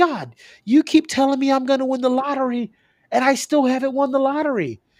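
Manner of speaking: very high, shrill, fed-up, irate shouting. Telling a joke, retelling John yelling at God: retelling an irate yell. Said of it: "John got irate and he yelled at God".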